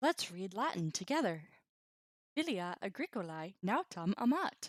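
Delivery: put-on robotic telemarketer voice. Reading a Latin sample sentence together aloud: put-on bot voice. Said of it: "I'll just do my best bot voice".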